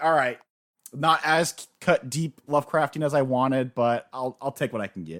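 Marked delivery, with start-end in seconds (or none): none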